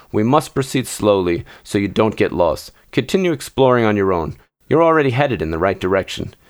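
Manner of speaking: ordinary delivery, nothing marked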